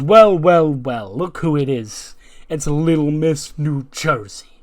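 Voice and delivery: loud, slow, cocky manager-style voice.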